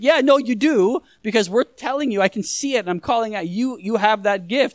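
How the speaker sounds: normal talking voice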